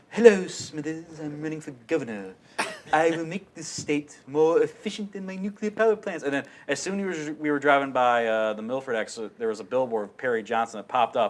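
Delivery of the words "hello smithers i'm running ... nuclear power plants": raised, scheming, villainous cartoon tycoon put-on voice. Joking with your brother about a candidate for governor who looks like him, Mr. Burns voice. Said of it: "And I was doing a Mr. Burns like".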